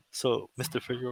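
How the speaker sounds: put-on whisper. Retelling what the judge whispered in the courtroom: imitating a whisper. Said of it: "whispered at me".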